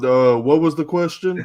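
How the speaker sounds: high, loud, sudden blurted outburst. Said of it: "he wait to hear his name and then go".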